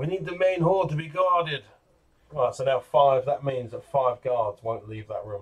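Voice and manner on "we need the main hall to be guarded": put-on, pitched-up German accent. A character speaks over the comm station, in a german accent. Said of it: "She's going to put her best German voice on".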